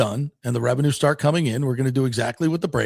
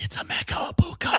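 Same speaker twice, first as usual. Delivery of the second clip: put-on excited whisper-shout, pitched higher; 5 dB quieter than usual. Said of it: "She whisper screamed".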